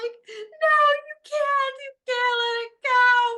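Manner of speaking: very high, loud, bawling, distraught crying. Recalling her past self in her husband's office, reenacting bawling her eyes out. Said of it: "I'm bawling my eyes out".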